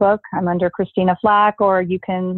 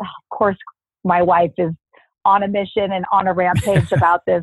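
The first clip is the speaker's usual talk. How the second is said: ordinary delivery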